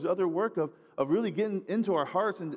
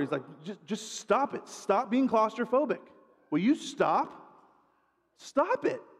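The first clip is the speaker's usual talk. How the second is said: acted-out voice growing steadily louder; 4 semitones higher than usual. Telling a joke about a counselor and a claustrophobic client, imitating someone getting louder. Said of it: "he starts to get like louder".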